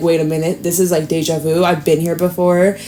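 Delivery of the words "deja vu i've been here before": ordinary talk, nothing marked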